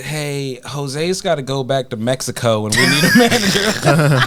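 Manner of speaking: put-on Southern Alabama accent. Telling a job story, the speaker quotes what the bosses said, in an Alabama accent. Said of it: "this is with an Alabama accent".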